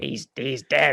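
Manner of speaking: put-on deadpan voice. Trying to repeat a film line: Ernest Borgnine voice. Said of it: "I can't do an Ernest Borgnine voice".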